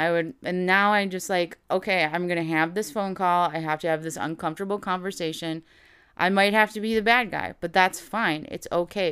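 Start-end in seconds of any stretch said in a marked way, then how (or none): none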